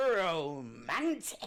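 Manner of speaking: strong emphatic stress on the word "romantic". Correcting a plain reading of a dialogue word: emphatic ROMANTIC. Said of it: "not just romantic".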